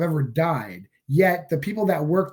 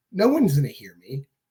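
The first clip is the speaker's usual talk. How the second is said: usual speaking voice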